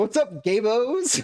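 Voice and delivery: put-on very high, very slow, loud drawn-out holler. Acting out meeting two friends in a bar: imitating a loud greeting. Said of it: "really loud".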